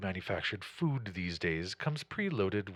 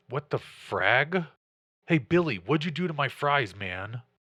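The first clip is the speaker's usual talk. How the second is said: put-on loud, high voice of a late-teen guy; 5 semitones higher, 7 dB louder than usual. Narrator voicing someone at the table behind the listeners: late-teen young male voice. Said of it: "a younger male's voice, late teens".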